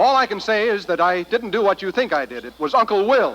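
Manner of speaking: high-pitched blurted outburst, words tumbling out. Insisting to another speaker that he didn't do it: shouting. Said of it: "you don't have to shout".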